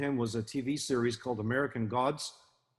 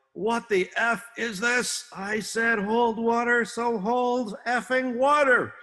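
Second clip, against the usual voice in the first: very high, loud roaring yell with stretched words; 11 semitones higher, 6 dB louder than usual. Retelling yelling at a boat crew to hold water: retelling a yell. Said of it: "I yelled".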